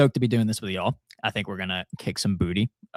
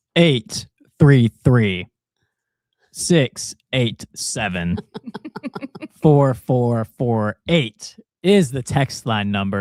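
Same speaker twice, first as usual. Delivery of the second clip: very slow, loud, deliberate readout of numbers. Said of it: "say the number very slowly".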